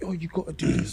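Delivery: high, pushy, bossy nagging voice.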